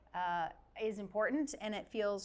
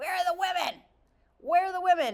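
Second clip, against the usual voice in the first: put-on very loud, high-pitched old lady voice; 9 semitones higher, 9 dB louder than usual. Recalling raising her hand as a tiny child and asking; old lady voice. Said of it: "that you're an old lady voice when you do it too".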